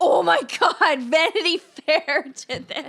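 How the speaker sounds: loud, amazed exclamation blurted through a laugh. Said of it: "And I'm just like".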